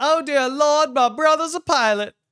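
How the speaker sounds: put-on high society-girl voice. Imagining the listener's brother reacting to his flight, prim debutante voice. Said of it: "talks like a debutante".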